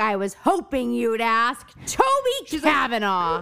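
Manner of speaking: pumped, swooping sing-song delivery. Retelling a character's reply about who she tutors: imitating someone pumped.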